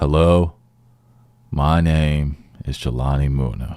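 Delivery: put-on unexcited tone. Coaching someone to get excited for their show intro, imitating an unexcited intro. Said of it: "I don't want to see no more of that".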